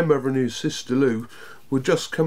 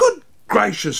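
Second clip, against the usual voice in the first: sudden, high-pitched exclaiming voice; 7 semitones higher, 4 dB louder than usual. A grandmother reacts to her grandson's odd friend, exclaiming. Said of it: "exclaimed his grandmother".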